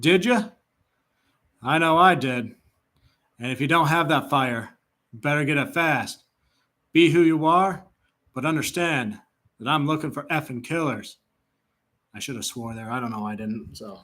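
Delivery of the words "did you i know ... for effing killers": choppy football-coach pep-talk voice in short bursts. Doing an impression of the Arizona Cardinals head coach: monotone choppy Jonathan Gannon impression. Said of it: "impersonations of one Jonathan Gannon".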